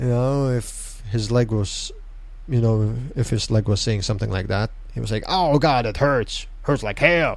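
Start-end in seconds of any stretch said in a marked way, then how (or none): 5.3-7.4 clumsy, badly done put-on Western accent. Recapping a wrestling match, quoting Mr. De Leon in a bad Western accent. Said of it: "my bad Western accent aside".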